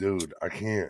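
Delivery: ordinary talk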